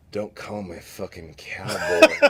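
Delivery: mock mournful, heavy-hearted, slow, sorrowful delivery. Retelling what Big Mike said over his drink: sorrowful Big Mike imitation. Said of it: "looks up at me from his drink in sorrow and he goes".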